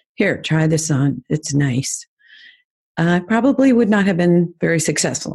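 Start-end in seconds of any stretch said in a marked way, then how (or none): 0.2-2.1 very calm, mild, low-energy tone. Offering a try-on while doing facials, said very calmly. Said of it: "if I just sat there very calmly and said".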